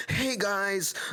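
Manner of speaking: irritating, high, grating video-host influencer cadence. Imitating a figure collector on a For You page: imitating a grating TikTok voice. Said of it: "he would talk like that".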